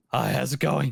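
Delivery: spent, almost-gone voice. Recalling arriving at a convention, imitating a nearly lost voice. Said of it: "I'm trying to replicate it".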